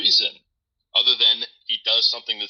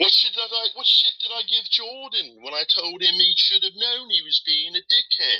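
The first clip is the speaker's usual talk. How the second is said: slight northern inflection, pitched up; 9 semitones higher than usual. Do an impression of someone denying giving Jordan shit, an impression with a northern inflection. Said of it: "kind of got that northern inflection".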